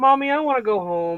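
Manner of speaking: put-on high, loud, whiny child voice. Retelling a boy lying face down in a cupcake costume: imitating a whiny child. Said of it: "laying face down on the ground going".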